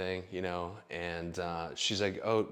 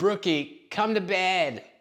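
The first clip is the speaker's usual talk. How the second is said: put-on very high, slow, drawn-out, whiny baby voice; 11 semitones higher, 7 dB louder than usual. Retelling an evening at Brooke's, the speaker imitates David calling Brooke to bed, whining like a baby. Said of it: "like a little whiny baby".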